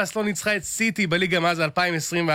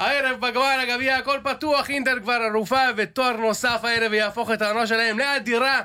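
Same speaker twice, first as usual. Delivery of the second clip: high-pitched mock Italian accent. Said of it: "אתה רוצה את זה במבטא איטלקי".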